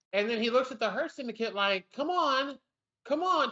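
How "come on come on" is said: put-on, high, drawn-out coaxing, goading hype-up. Retelling a wrestler urging the Hurt Syndicate to join in: imitating someone egging others on. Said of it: "trying to egg 'em on".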